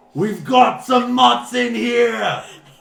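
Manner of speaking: very high, very loud, raw, rough ogre screech. The game master voices the ogres as they spot the players: ogres screaming. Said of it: "the ogres start screaming".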